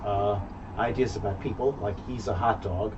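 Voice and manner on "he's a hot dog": plain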